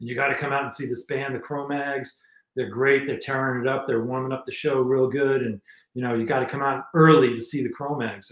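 ordinary talk, nothing marked

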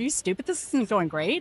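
put-on dismissive attitude. Retelling the way he said it, in a mock-dismissive tone. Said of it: "The attitude was like".

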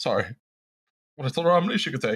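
voice thick with feeling. Recounting giving apples to a woman, correcting yourself, voice thick with emotion. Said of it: "[voice thick with emotion]".

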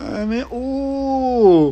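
high, loud, mock slow-motion, stretched-out voice.

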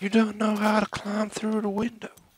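high, slow, teasing, mocking taunt.

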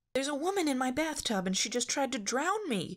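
cross voice, pitched very high. Asked why she is wet, the girl answers her companion crossly. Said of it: "Daphne said crossly".

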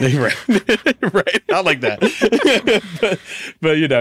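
very high, very slow words through laughter. Speaker addressing the audience and a guest, laughing.

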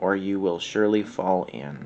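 usual speaking voice

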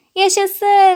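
gleeful, high-pitched, joyful cheer of delight. Reading a story, the baby owl hears a new book is coming: shouting joyfully. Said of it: "diye sevinçle bağırdı yavru baykuş".

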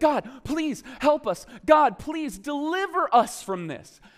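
put-on terrified, high, pleading cry. Describing trapped, terrified people, acting out their cry to god. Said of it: "They cry out to God".

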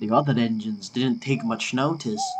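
usual speaking voice

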